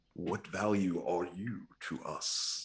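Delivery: hushed, quiet whisper. Playing a character in a game, speaking to another character, whispering. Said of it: "I'll just whisper to him".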